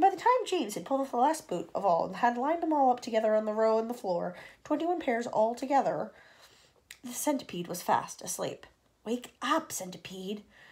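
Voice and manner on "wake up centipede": soft, hushed half-whisper under the breath. Reading James waking the sleeping centipede, half-whispered. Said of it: "whispered James".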